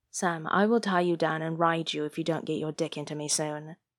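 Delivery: ordinary delivery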